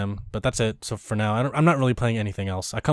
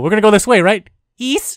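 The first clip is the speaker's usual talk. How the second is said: put-on little girl voice, higher, louder; 9 semitones higher, 9 dB louder than usual. Repeating how the other speaker just said a direction, in a little japanese girl voice. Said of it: "Let's just leave it at Japanese girl".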